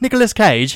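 put-on British accent, very high and very loud. Repeating a name in conversation, british accent. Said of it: "I just said Nicolas Cage like in a British accent".

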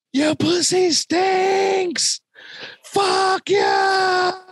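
shrill, very high, very slow, drawn-out yell. Speaker retelling what a man passing by suddenly said, retelling a man's yell. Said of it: "he's just yelling it out in the air".

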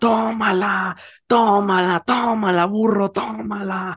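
jeering shout, very high and very drawn-out. Recounting how a boy's father started yelling at him, retelling a shouted taunt. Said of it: "empezó a gritarme".

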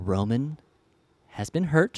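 mock whispered speech. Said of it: "whispering in my ear".

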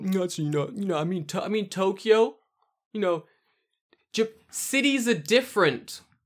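drawn-out, patronizing, condescending know-it-all tone. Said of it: "I don't want them to have to go".

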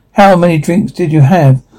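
plain

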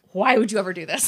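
put-on very angry voice. Retelling own reaction to a movie scene, retelling own angry reaction. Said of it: "I actually got really mad".

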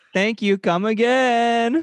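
put-on light Indian accent, very high pitch. Signing off to listeners at the end, slipping into a slight put-on Indian accent. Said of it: "You kind of did. You were trailing".

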